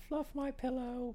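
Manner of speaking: very high, very soft, hushed woman voice. Repeating the other speaker's line back, in a put-on woman voice. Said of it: "That was my woman voice".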